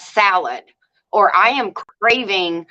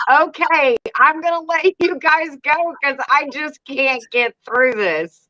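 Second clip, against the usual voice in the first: mock giggling through tears, crying with laughter; 6 semitones higher than usual. Recounting the end of a video after kicking the tripod, retelling crying with laughter. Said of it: "I'm actually crying".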